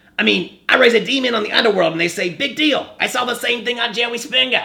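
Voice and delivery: very high, put-on goblin voice. Discussing a movie, the speaker quotes a character's line: goblin on the bus voice. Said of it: "That's my goblin on the bus voice".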